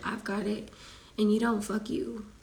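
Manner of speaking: normal talking voice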